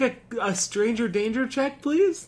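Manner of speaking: high mocking child voice.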